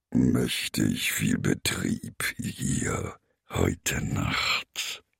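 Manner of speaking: creaky-voiced, creaking voice. Narrator reads a forest creature's line at night, in a creaky voice. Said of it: "Sagte er mit knarrender Stimme".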